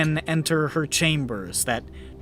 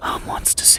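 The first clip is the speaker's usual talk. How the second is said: breathy whisper, very close to the ear. A figure stumbles into you, pretending to be drunk, whispering in your ear. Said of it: "just sort of whispers in your ear".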